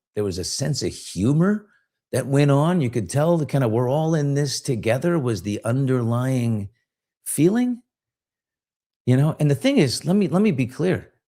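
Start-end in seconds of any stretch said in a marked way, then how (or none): none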